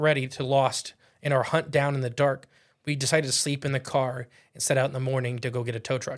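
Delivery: ordinary talk, nothing marked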